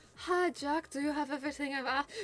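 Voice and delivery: put-on girly voice. Voicing the character Monica, greeting Jack, in a girly accent. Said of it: "an accent with a coat of girly paint".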